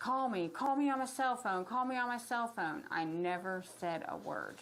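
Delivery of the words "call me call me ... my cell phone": mock frantic, loud, high-pitched repeated shouting. Retelling someone pounding on the door: imitating someone yelling frantically. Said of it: "He was frantic, and it was loud".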